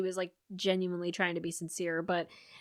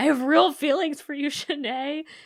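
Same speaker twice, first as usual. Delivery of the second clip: crying, tearful, pitched-up and raised voice; 7 semitones higher, 6 dB louder than usual. Retelling a preview scene where someone confesses feelings: imitating someone crying.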